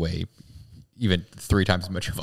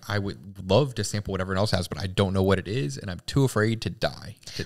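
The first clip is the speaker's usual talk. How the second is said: ordinary talk, nothing marked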